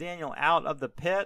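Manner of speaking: ordinary talk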